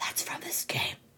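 unvoiced soft whisper. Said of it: "whisper to her".

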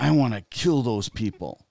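put-on angry three-year-old child voice. Retelling a three-year-old boy's reaction to the news, imitating an angry child. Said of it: "he got really angry".

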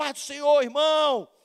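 happy high-pitched shout. Describing a hard-working brother hauling rubble, imitating a joyful shout. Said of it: "E ele vai gritando assim".

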